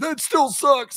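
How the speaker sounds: high, slow, whining, mocking tone.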